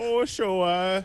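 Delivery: put-on Buffalo accent. Mocking how another speaker said a name: imitating a Buffalo, New York accent. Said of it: "Way to sound like you're from, like, Buffalo, New York".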